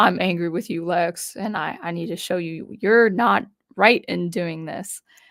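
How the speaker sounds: ordinary delivery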